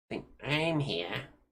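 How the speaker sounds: small, sly, sneaky and weaselly little voice. A game master voices a character answering when the party asks for names: Tommy Tidgeball's sneaky, weaselly voice. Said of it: "kind of sneaky, weaselly little voice".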